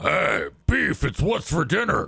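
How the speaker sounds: put-on rough gravelly voice. Showing how the medicine changed Ash's voice: imitating Ash's motor-oil gargling voice. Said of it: "has made his voice like".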